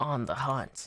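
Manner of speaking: put-on gritty voice. Copying a companion's game line, imitating Obvious's voice. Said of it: "Such an interesting voice that Obvious has".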